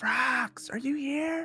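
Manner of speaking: loud stage whisper, pitched very high. Calling out to find someone who ran away, in a loud whisper. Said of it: "I'm whispering loudly".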